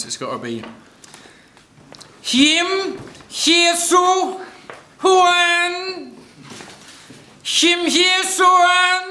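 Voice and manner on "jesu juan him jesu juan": put-on comic character voice. Trying out a backwards-speech line for the camera: sounds like Borat. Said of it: "You sound like Borat".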